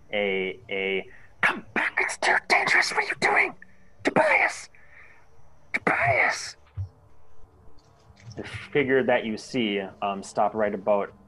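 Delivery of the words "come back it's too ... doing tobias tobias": hurried, intense loud whisper. Voicing a figure calling out in the darkness: loud whisper. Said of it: "you hear a loud whisper".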